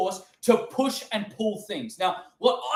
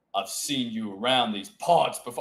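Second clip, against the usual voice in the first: very low-pitched cowboy drawl; 12 semitones lower than usual. Speaker acting out Balin meeting Darth Revan, talking like a cowboy. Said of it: "He's like a fucking cowboy".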